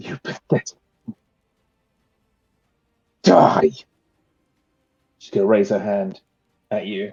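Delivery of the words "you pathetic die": rough, forced out between clenched teeth. Narrating a game, voicing a wounded woman speaking to the player, through gritted teeth. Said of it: "You see through gritted teeth".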